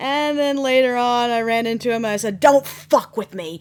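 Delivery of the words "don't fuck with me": most venomous, furious, loud raging voice. Retelling what one said on running into him later: retelling own furious line. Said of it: "with the most angry, poisonous, d-, just rage".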